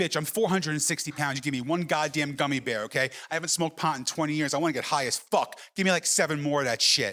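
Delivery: plain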